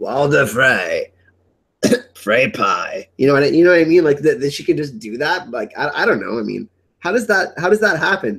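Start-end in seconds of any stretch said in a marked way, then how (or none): 0.0-3.1 low, slow mock old man voice. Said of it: "How the hell did she mimic Walder Frey's voice".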